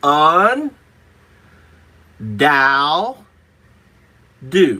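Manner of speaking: very slow, each syllable set apart. Correcting a mispronunciation, the speaker says the word again very slowly, syllable by syllable. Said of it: "I'll say it really slow".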